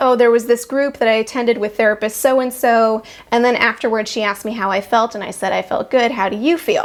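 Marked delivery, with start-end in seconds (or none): none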